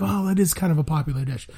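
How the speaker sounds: usual speaking voice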